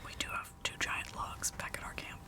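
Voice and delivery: soft, unvoiced whisper under the breath.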